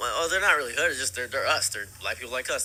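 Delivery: ordinary delivery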